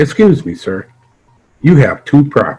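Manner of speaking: put-on acted sweetly courteous old woman voice. Retelling what an elderly woman at the bus stop said, imitating a kindly tone. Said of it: "very kindly".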